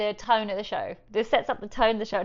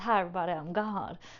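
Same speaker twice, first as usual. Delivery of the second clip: put-on Southern US cowboy voice; 3 semitones lower, 5 dB quieter than usual. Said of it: "His mama's [name]".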